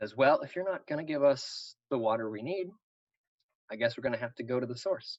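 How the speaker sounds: soft-spoken, quiet, understated, low-key delivery. Narrating a scene, the speaker voices Four Eyes as a hush falls; quiet voice. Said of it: "in a quiet voice".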